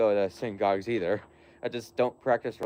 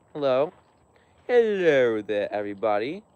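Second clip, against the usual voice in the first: slow, affected, put-on fancy voice; 3 semitones higher, 4 dB louder than usual. Greeting people who are saying hi, in a put-on fancy voice. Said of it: "I like to say that in a fancy voice".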